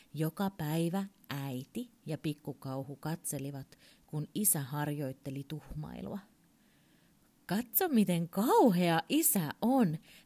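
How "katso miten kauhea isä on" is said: proud, boastful, showing off, raised voice. A mother and child watch the father practise; the mother speaks, proud. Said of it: "äiti sanoi ylpeänä".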